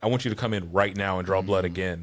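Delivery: put-on genuinely concerned, serious, worried voice. Retelling the doctor insisting on a new blood draw: imitating a genuinely concerned doctor. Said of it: "genuinely concerned".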